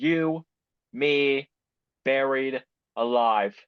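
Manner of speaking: very slow, each word spaced apart and drawn out. Recapping a wrestling segment, quoting one wrestler's words to another: very slow. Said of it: "he says very slowly".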